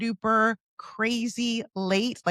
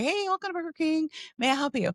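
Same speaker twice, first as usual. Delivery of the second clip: faint little far-off voice, high and quick; 6 semitones higher than usual. Retelling the voice at the ordering mic greeting him, in a faint little voice. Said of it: "I hear this faint little voice say".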